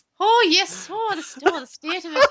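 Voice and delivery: loud, high, terrible stage-Irish accent. Joking about a listener's complaint, putting on a crap Irish accent. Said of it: "our crap Irish accents".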